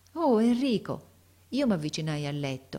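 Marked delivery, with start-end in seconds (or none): 0.2-1.1 fond, loving, high-pitched affectionate exclamation. A teacher lying in bed greets a visiting pupil, affectionate exclamation. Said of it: "esclamò con la sua voce affettuosa".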